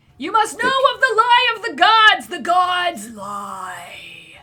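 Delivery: very loud, frantic, swooping scream, "lie" drawn out. Voicing a character during a game session, screaming at the top of his lungs. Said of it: "screaming and yelling at the top of his lungs".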